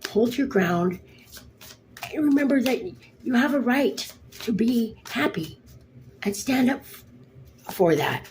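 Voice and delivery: voice breaking with emotion. Reading an oracle card's message to listeners, choked up. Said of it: "I got choked up there for a minute".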